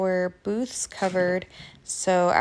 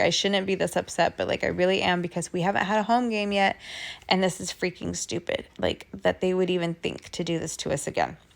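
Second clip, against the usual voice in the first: ordinary delivery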